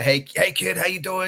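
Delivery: very high, stretched-out southern drawl. Recalling walking into the room with young James, imitating Bray's southern drawl. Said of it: "that that that southern, you know, drawl".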